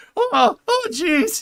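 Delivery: very high, loud stammering squeak. Explaining which voice they gave a person, in Morty voice. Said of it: "I gave him Morty voice".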